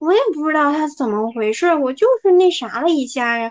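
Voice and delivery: feigned wide-eyed innocence, playing dumb, protesting tone. Imitating how he acts once the conflict is exposed to everyone, imitating playing innocent. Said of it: "无辜小白兔".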